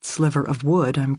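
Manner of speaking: plain reading voice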